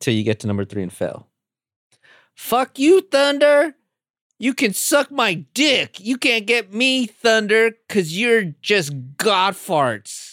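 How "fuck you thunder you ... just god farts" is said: hammy, bad acting, high-pitched and very slow, drawn out. Acting out a movie quote for the other player to guess: terrible acting. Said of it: "That was terrible acting".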